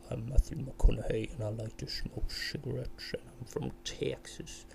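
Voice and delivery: boomy, rough, bassy voice, very close to the mic. Demonstrating talking really close to the microphone: close-mic bassy voice. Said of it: "go really close to the microphone and talk like this".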